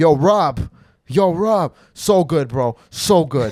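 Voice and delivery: loud, very slow, drawn-out gushing. Retelling what a fan said after the show: imitating a coked-up fan. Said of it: "He's like".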